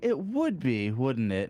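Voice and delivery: heavy, swooping, acted-out sarcasm. Speaker acts out what she would say; putting on heavy sarcasm. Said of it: "sarcastic as hell".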